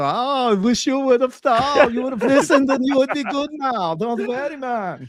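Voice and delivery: high, loud put-on voice, pitched way up and belted. Imagining talking to a friend being chased by a mountain lion: Arnold Schwarzenegger voice. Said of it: "my, uh, you know, Arnold Schwarzenegger voice".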